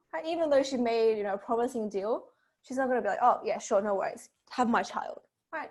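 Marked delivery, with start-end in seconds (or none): none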